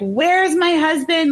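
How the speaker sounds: mock high wailing scream broken by sobbing. Retelling how a woman lost it and got out of the car: retelling a woman's screaming. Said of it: "she's screaming like".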